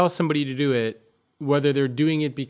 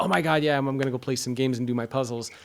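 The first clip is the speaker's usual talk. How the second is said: mock eager, excited young girl's voice. Retelling how a daughter reacts when keen on chess: imitating daughter's genuine excitement. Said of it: "because she's genuinely into it".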